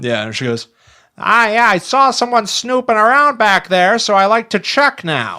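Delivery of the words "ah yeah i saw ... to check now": very high, nutty, crazy-sounding voice. Retelling a neighbor explaining she checks for snoopers: imitating crazy next door neighbor. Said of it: "My voice is that accurate".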